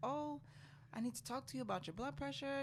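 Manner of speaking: offhand, businesslike delivery. Recounting a postpartum checkup, the speaker quotes the doctor: retelling a matter-of-fact remark. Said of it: "saying it almost matter of factly".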